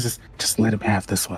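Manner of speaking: hushed whisper. Voicing a character who leans over to Grung: whispering. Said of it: "just whispers".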